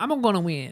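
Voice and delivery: high-pitched cartoonish video game character voice. Joking about Mario characters, saying one line in a Luigi voice. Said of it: "That's, uh, Luigi".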